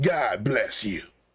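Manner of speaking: play-acted nasty, spiteful, mean-spirited delivery. Mocking how people say a blessing: imitating a spiteful "God bless you". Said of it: "The tone you're using".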